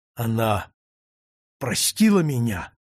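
gasping, breathless. A man asks the tiny creature a question, gasping. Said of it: "задыхаясь".

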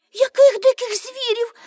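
trembling, quavering, very high-pitched. Told the campfire keeps wild animals away, a companion asks in a trembling voice. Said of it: "тремтячим голосом запитала Аніка".

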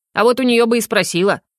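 ordinary delivery, nothing marked

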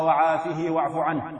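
normal talking voice

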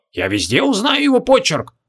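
astonished, high swooping exclamation. Narrator reads a conservative sorcerer recognizing the scroll's handwriting, amazed. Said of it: "изумился Зарусек-консерватор".

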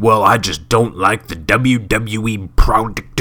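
slow, whiny, grumbling voice. Quoting listeners' answers about Impact Wrestling, in an internet mark complainer voice. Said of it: "That's my internet Mark complainer voice".

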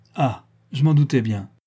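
crying out, exclaiming. A narrator reads Li Kuangang, once alone with the travellers, exclaiming. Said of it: "il s'écria".

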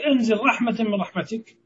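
normal talking voice

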